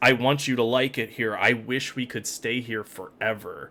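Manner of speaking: ordinary talk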